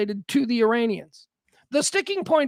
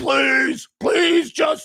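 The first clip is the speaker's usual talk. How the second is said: put-on pleading voice; 3 dB louder than usual. Retelling how the other side made Trump back down: imitating Trump pleading. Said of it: "And Trump's like".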